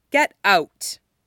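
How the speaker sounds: toneless, flat, deadpan, expressionless. Stiles tells the two men to leave without looking up, flat. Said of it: "says flatly".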